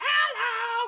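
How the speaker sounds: full-on toad voice, very high and very loud. Showing chat what a full toad voice sounds like. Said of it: "If I wanna go full toad".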